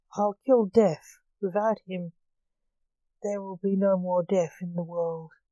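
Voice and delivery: ordinary delivery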